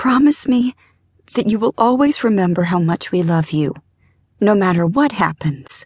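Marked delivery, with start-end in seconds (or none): none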